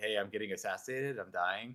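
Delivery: play-acted calm, flat, unbothered matter-of-fact deadpan. Speaker retells a player's words while being stabbed in the game, retelling a calm tone. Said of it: "his calm tone of voice".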